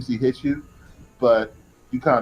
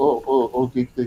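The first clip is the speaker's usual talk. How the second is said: put-on stutter at a much slower pace. Describing the man who'll be at the house, imitating a stutter. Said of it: "and he stutters".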